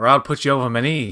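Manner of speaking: Mid-Atlantic accented voice. Answering a teasing remark about an accent: put-on Mid-Atlantic accent. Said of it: "You have a Mid-Atlantic accent".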